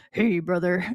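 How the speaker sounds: attempted deep voice. Retelling walking through the warehouse in disguise: attempted deep voice. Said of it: "I can't do a deep voice at all".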